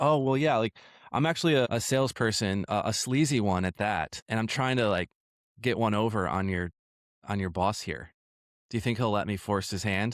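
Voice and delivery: ordinary talk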